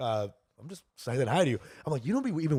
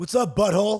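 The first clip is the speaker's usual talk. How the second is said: mock casual, loud, high, yelled across the room; 7 semitones higher, 5 dB louder than usual. Retelling what a guy yelled on the street: imitating a guy yelling. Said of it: "This is what this guy yelled".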